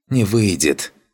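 hissing, breathing hard. Narrator voices an assassin in a fight, answering with a panting hiss. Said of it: "тяжело дыша, прошипел ассасин".

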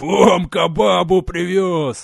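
booming, thunderous, high-pitched yell. Turning to face into the yard, he yells to those inside. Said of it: "громогласно заорал".

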